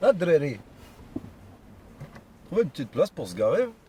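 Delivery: clumsy, badly done put-on Belgian accent. Mimicking how people from Brussels talk, in a bad Belgian accent. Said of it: "je fais très mal l'accent belge".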